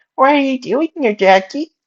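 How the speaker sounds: put-on very high-pitched, babyish voice. A narrator reads the first-person character's line to Jackie: baby voice. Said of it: "making my better baby voice".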